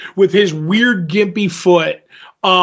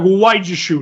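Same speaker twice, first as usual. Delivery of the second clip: mock, belittling, condescending talking-down tone. Retelling a show's scene, quoting the mother: imitating a belittling mother. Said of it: "belittling him because she's like".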